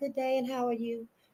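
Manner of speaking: put-on, soft, proper telephone voice. Describing having a telephone voice, then demonstrating their telephone voice. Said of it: "I got a telephone voice too".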